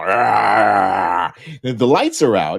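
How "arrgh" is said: loud growling monster voice. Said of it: "loud growl".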